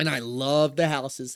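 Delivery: sarcastic, ironic tone. Describing hoarder houses from cable installation work: sarcastic. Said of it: "I'm saying this with sarcasm".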